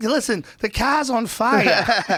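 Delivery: put-on thick Boston accent. Retelling a prank call to a rental car company: heavy boston accent. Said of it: "this heavy Boston accent".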